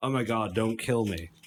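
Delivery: ordinary talk, nothing marked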